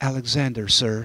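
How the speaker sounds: sheepish. A young soldier answers Alexander the Great, who asked his name: sheepish. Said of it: "The young soldier said sheepishly".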